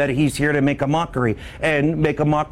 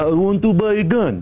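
fake Eastern European accent, laid on, pitched up; 5 semitones higher than usual. Retelling what a disguised man said after a handshake, in a Borat voice. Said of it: "talking like that".

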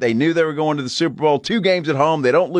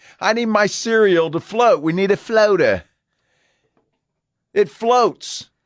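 put-on British accent, pitched up; 5 semitones higher than usual. While talking about cereal, the speaker slips into a British accent. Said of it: "why did you go with the British accent".

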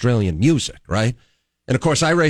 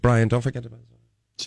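quick mumbled mutter, hard to catch; 3 dB quieter than usual. Speaker imitates a woman mumbling a reminder to him in passing, mumbled. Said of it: "kind of mumble something like".

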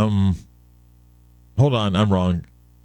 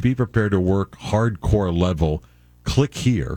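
plain

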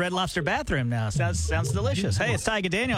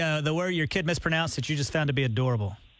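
plain

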